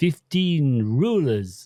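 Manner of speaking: put-on Eastern European accent. Speaker recalls what he would say at the end of the lesson, in an eastern european accent. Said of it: "he had an Eastern European accent".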